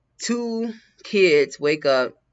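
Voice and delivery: very slow, drawn-out, unwell-sounding delivery.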